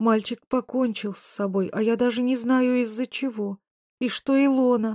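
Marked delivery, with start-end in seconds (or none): none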